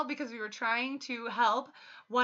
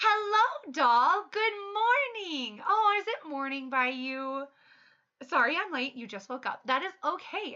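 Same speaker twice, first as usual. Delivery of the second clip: cheerful, sunny, bright, high happy voice; 5 semitones higher than usual. Apologizing for being late to someone who just woke up, speaking in a happy voice. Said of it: "my my happy voice".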